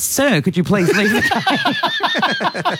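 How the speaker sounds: high, slow, prim official voice.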